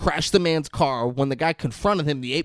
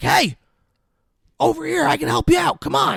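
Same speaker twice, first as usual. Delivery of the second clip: play-acted, very high, rough shrieked call; 13 semitones higher, 4 dB louder than usual. A speaker retells a guy calling out to others, retelling a scream. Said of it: "He's just screaming this".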